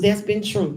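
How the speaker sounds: ordinary delivery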